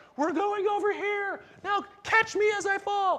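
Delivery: very high, loud, slow mock scream.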